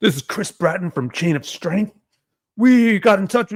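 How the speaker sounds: stiff, formal manner. Recounting a caller who said the speaker's full name: imitating Chris Bratton's mock-formal tone. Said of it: "like so like formal".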